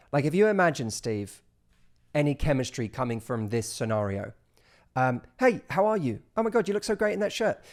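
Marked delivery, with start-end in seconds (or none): 5.4-7.6 quick, blurted-out, pitched-up delivery. Acting out someone quickly blurting a compliment: rushed-out compliment. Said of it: "someone who really quickly said the compliment".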